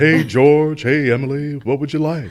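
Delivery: very high, very loud, booming voice. Showing how a character was modeled on a great uncle: imitating great uncle Leonard. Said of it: "the way he talked was kind of like this".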